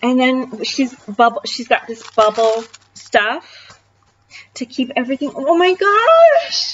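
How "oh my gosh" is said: voice cracking and breaking up on words. Going through things she sent, voice cracking. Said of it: "my voice is like cracking".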